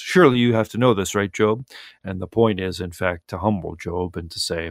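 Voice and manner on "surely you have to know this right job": put-on sarcastic god-like voice. Paraphrasing the Lord questioning Job: imitating the Lord's sarcasm. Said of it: "a little bit of sarcasm".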